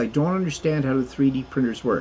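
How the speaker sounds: ordinary talk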